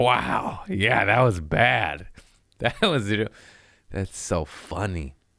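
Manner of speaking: mock amused voice broken by laughter, tickled. Retelling how a relative answers when reminded of hard times: imitating a relative laughing while answering. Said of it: "the facial expression they give when you say that, they go".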